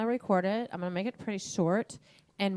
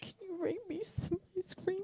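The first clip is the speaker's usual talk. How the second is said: very high, crackly, crackling, sick-sounding voice; 11 semitones higher, 9 dB quieter than usual. Retelling Morgan calling while sick at home: imitating Morgan's crackling voice. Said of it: "in her crackling voice".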